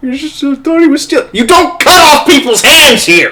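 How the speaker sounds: very high, loud, tearful sobbing voice. In character as a fop answering a scolding about rule number one, crying voice. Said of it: "with a crying voice".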